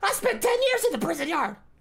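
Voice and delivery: very high-pitched, mocking put-on tone. Mocking men who boast of prison time: high-pitched mocking voice. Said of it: "They all have high pitched voices".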